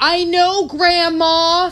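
very high, furious, angry shriek. Retelling how a girl at the mall yelled, imitating her yell. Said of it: "she yells".

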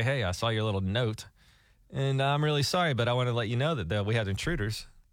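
ordinary talk

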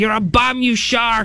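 high, taunting ringside boxing-trainer voice. Picturing a movie character who is trying to kill a shark: Mick from Rocky voice. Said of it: "he sounds like Mick from Rocky".

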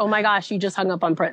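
ordinary talk

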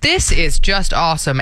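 plain

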